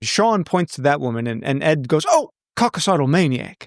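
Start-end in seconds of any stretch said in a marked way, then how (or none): 2.1-3.7 Australian-sounding delivery. Retelling a movie character's ad-libbed line: imitating a line in Australian accent. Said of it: "That just sounded Australian".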